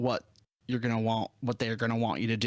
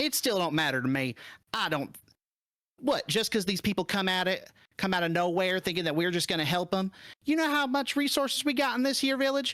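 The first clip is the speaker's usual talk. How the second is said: high-pitched, bickering, arguing right back; 9 semitones higher than usual. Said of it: "overhear a little bit of bickering".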